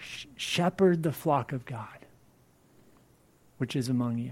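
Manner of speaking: passionate, impassioned urging delivery.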